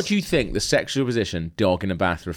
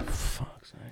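put-on dog voice, quieter. Retelling giving the dog a bath, speaking as Coco: voicing Coco the dog. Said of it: "And she went".

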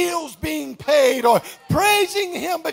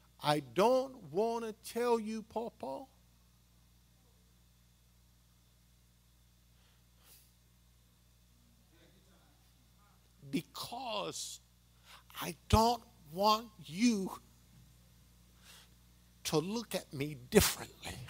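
mock tearful pleading, lower and quieter; 7 semitones lower, 14 dB quieter than usual. Retelling a grandchild's tearful phone confession: imitating a granddaughter crying. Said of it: "And she was crying".

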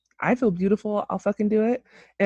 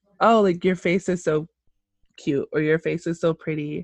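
ordinary delivery

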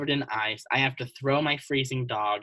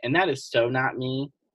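plain

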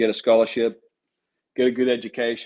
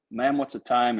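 usual speaking voice

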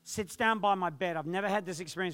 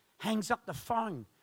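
plain

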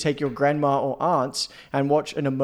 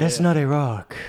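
hammy, exaggerated South American accent. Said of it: "Do it in an accent, please".

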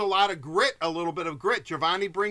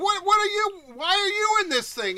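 acted-out, very high screamed yell; 13 semitones higher, 4 dB louder than usual. Retelling what people in a parade yelled: imitating people screaming. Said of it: "people are screaming at me".

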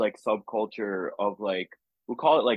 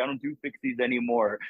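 put-on stoked voice; 3 semitones higher than usual. Retelling a friend's reply about his new moped: imitating Benji, stoked. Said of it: "that's just how he sounds".

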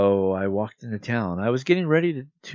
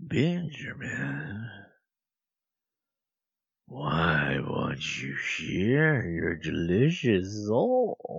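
low, growling, taunting beast voice; 5 semitones lower, 4 dB quieter than usual. Reading a story aloud, voicing the beast that waits for Benjamin, growling. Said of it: "The voice growled".

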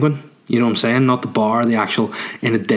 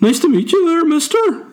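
put-on squeaky, very high little boy voice; 3 dB louder than usual. Telling a story about the minister's son, imitate how the young boy talked. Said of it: "That his voice is like".

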